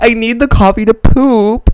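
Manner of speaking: play-acted, slow, drawn-out, wailing sobbing scream. Retelling a fight with the speaker's dad over coffee, imitating her scream crying. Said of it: "she was like scream crying".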